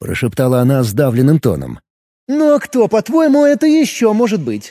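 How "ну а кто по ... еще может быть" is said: teasing, scornful, mocking tone, pitched up. Narrator reading an unseen voice answering a startled woman, mocking. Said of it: "насмешливо спросил голос".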